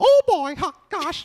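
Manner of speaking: squeaky voice, high and loud. Describing voices worse than their own, doing a little Mickey Mouse voice. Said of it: "little Mickey Mouse voice".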